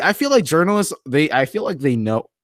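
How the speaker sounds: voice cracking mid-line. Streamer talking to live chat about journalists, voice cracking. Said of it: "my voice just cracked".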